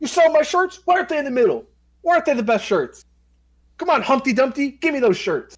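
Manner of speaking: play-acted, harassing, bossy, high, demanding yelling. Retelling how Edge yells at the merch guy: imitating Edge yelling. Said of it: "yells at him".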